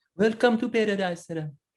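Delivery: very high-pitched put-on Jamaican accent. Recalling how a man greeted a co-host, in a Jamaican accent. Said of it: "that Jamaican accent".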